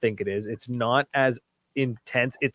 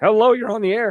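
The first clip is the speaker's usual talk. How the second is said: very high, loud voice cracking mid-line; 9 semitones higher, 7 dB louder than usual. Host greeting a caller on the air, voice cracking. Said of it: "my voice just cracked".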